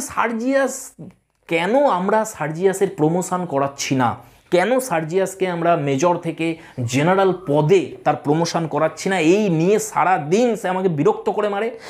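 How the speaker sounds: ordinary talk, nothing marked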